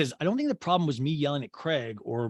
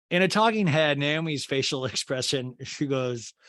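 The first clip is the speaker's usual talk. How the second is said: ordinary talk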